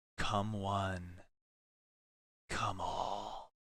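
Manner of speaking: faint, gentle, soft half-whisper. Narrating a story, voicing a woman who giggled, gentle half-whisper. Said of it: "gently whisper".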